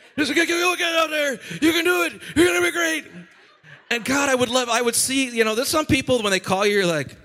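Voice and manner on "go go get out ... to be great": high, hoarse high-school coach voice, energetic. Retelling how a mentor cheers people on: imitating a coach-like voice. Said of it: "Pastor Bernie always talks like every high school coach I ever had".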